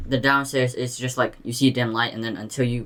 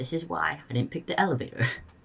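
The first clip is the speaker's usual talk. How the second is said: hushed, soft, high half-whisper under the breath; 5 semitones higher, 6 dB quieter than usual. Recounting half-whispering to a companion in a swinging elevator, retelling a half-whisper. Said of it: "I whisper to him".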